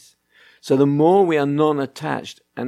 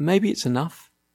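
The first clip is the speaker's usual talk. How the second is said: very quiet, calm, even-tempered, gentle, peaceful; 3 semitones higher than usual. Retelling telling two shouting children to stop: saying it quietly and peacefully. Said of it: "very quietly and peacefully".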